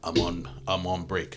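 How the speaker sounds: put-on slow, drawn-out Russian accent. Speaker retelling a movie plot, voicing Yelena's reply to Valentina: Yelena's Russian accent. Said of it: "but in you know Russian accent".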